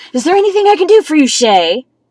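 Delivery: snide, patronizing tone. Retelling how he turned around and spoke to shay, mocking a condescending, snarky tone. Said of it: "In a very condescending, snarky ass tone".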